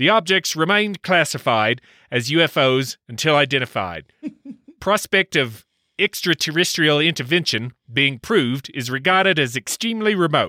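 terrible, very bad put-on New Zealand accent. Reading a quoted statement aloud on the show: very bad new zealand accent. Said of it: "Let's try a very bad New Zealand accent".

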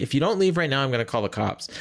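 ordinary talk

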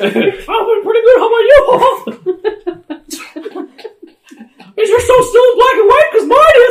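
loud, high-pitched squeaky voice. Comedians improvise a crude sketch, one speaking in a Mickey Mouse voice. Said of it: "That's a really good Mickey Mouse voice".

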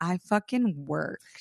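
boastful, self-satisfied, proud tone. Teasing another speaker about being tired: imitating someone proudly. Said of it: "do you feel proud that you're fatigued?".

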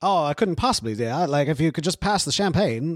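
put-on mid-Atlantic accent. Trying out the accent just described: put-on mid-Atlantic accent. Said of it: "kinda what you're going into".

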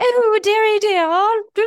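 high, loud mock old-timey posh film British.

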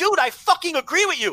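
mock very high-pitched, angry cursing outburst. Recounting a misunderstanding with the listener, retelling getting mad. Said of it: "I started getting mad because I thought you were being rude".

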